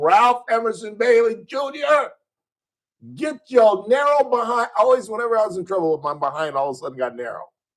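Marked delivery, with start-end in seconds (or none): 0.0-4.7 very high, drawn-out, screamed call. Retelling his mother calling him home from the yard: imitating his mother screaming. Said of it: "in the middle of the yard screaming".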